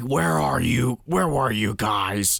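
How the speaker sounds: stern, demanding growled voice. Retelling how a coach greets the kids: imitating a growling coach. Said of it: "he is growling at, at these kids".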